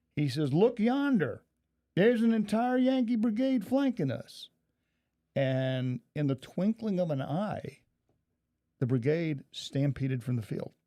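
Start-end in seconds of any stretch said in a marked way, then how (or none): 0.6-4.5 very high-pitched shout at full voice. Retelling what a captain on the brigade's flank said, retelling a really loud shout. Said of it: "says in a really loud voice".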